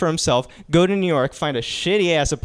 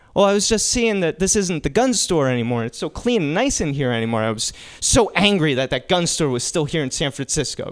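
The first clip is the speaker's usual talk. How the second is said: ordinary talk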